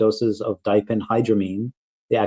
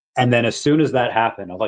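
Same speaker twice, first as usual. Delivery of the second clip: ordinary delivery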